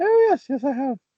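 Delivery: very high put-on woman's voice. Retelling a woman's reply to a photographer: imitating a woman's voice. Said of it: "what a sexist voice for the woman".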